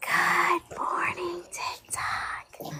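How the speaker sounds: eerie, spooky, hushed whisper. Greeting tiktok as the other laughs: put-on creepy whisper. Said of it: "Not the creepy voice".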